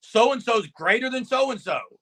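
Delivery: ordinary talk, nothing marked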